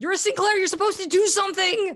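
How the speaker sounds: very high, loud, frantic, panicked screaming. A panicked student grabs the player by the shirt, panicked screaming. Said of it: "he's screaming, panicked into your face".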